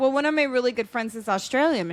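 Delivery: plain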